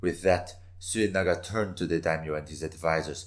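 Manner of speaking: plain reading voice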